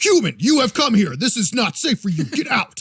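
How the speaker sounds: noble, grand big dog voice. Retelling the scene, voicing the centaur warning the kids in a big regal dog voice. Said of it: "talks like what I would imagine a big regal dog".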